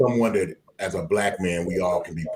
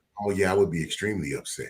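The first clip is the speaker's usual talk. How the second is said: acted, utterly calm and unbothered voice; 4 dB quieter than usual. Retelling a phone call with Mika, imitating a calm voice. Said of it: "in her most calm voice".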